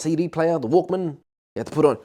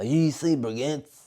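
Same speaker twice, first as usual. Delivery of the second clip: put-on young girl's voice; 6 dB quieter than usual. Retelling a random girl who came up once, imitating her voice. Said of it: "I'm mimicking her. ... That's how she sounded. It's exactly her voice".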